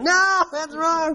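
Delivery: high, slow shouting.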